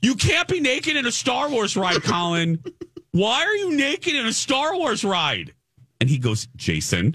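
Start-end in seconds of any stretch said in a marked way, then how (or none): 0.0-5.5 play-acted, shrill, very high screaming. Telling Grant how you yelled at Colin on the Star Wars ride, retelling own screaming. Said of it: "I'm screaming at him".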